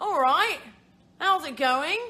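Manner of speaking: very loud, high, exaggerated bad British put-on accent. Recalling slipping into an accent, greeting done in bad British accent. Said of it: "I start doing a bad British accent. So I'm like".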